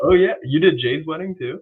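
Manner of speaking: high surprised voice. Learning the officiant also did another couple's wedding: surprised. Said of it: "why do you sound so surprised?".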